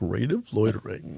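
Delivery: put-on radio-announcer voice, hushed and very quiet. Riffing with friends, capping the bit in a put-on announcer voice. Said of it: "That didn't even sound like you".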